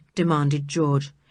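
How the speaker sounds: plain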